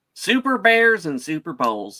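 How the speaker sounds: sports announcer voice with twang. Announcing the episode title to co-hosts, football announcer voice with twang. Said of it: "I like the twang that he threw in there".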